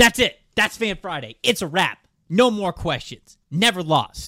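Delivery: tossed-off, swaggering delivery. Wrapping up the Q&A segment with a bold closing line: LeVar Ball impression. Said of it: "that was a little LeVar Ball there at the end".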